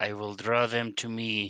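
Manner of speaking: hushed stage whisper. Speaking in character while moving up a little: stage whisper. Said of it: "in a stage whisper".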